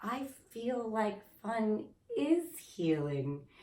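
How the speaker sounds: timid, innocent little voice, soft and slow. Retelling own words to a mentor: imitating own meek innocent voice. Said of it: "innocent voice in me came out very kind of meek".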